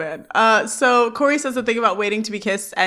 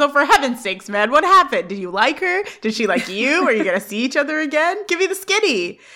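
mock fed-up, exasperated burst of questions; 4 semitones higher than usual. Retelling a character's outburst at a silent friend: imitating exasperated demand. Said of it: "exasperated at not getting info about it".

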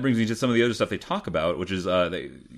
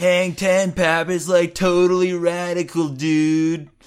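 very high, very slow, drawn-out bad surfer drawl; 10 semitones higher, 6 dB louder than usual. Quoting an FBI agent making fun of a colleague: imitating a bad surfer voice. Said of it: "said kind of like a bad surfer".

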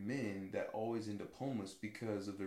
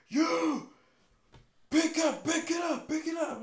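put-on condescending yell, much higher, louder, slower; 12 dB louder than usual. Recalling a man yelling at ROTC kids during drills, retelling a condescending yell. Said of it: "the guy was just yelling condescendingly".

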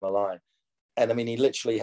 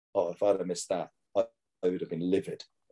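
put-on deadpan delivery; 2 semitones lower, 3 dB quieter than usual. Retelling a player's reply at dinner: imitating a deadpan reply. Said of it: "looked at me deadpan across the table".

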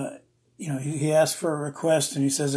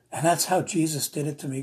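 ordinary delivery

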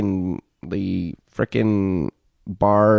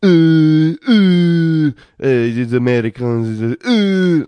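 very slow, loud mocking waiter voice, uhs stretched long; 9 semitones higher, 6 dB louder than usual. Retelling how a French waiter reacted to an order: imitating a mocking French waiter. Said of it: "making fun of me".

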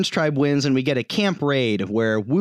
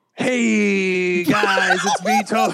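breezy, pitched-up voice with long, stretched first word; 6 semitones higher than usual. Asked for an impression, performing a Tony Vlachos voice. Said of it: "Give me your best Tony Vlachos".

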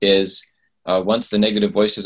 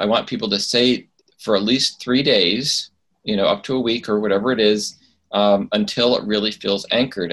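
ordinary talk, nothing marked

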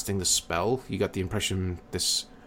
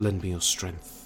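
hushed, small, whispered voice; 4 dB quieter than usual. A narrated character whispers a small prayer before casting a healing spell: whispered prayer. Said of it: "you hear him sort of whisper a small prayer".

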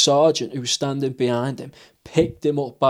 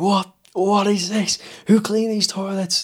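mock, high-pitched screaming sergeant voice; 7 semitones higher than usual. Retelling a sergeant's rant about the toilets, imitating a screaming sergeant. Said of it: "starts screaming".

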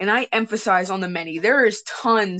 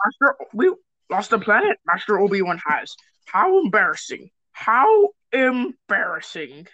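swooping, sing-song character voice, pitch swinging all over. Doing voices with a friend after recalling impressions: Yoda voice. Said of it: "I love doing the Yoda voice".

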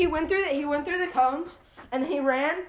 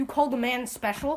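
ordinary delivery

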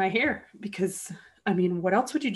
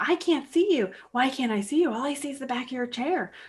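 put-on mild calling out, pitched up; 5 semitones higher than usual. Retelling a lady yelling for the speaker: imitating a lady yelling. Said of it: "she starts yelling".

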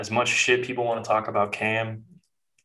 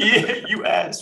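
put-on child taunting voice, higher pitch; 11 semitones higher, 4 dB louder than usual. Retelling a kid's taunts at a camp: imitating a kid heckling. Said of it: "Just kept talking big".

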